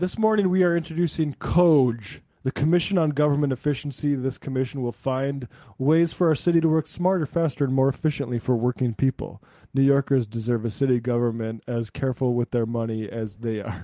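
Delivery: plain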